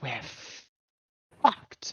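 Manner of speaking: quiet under-breath mutter. Playing a character who doesn't realize the kid is there, muttering under her breath. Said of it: "softly mutter under her breath".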